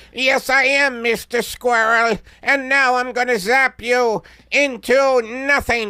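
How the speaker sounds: very loud, very high alien voice. Acting in a squirrel sketch, answering as the alien: alien character voice. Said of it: "you're obviously, though, an alien".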